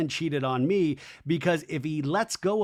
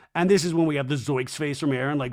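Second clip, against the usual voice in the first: ordinary delivery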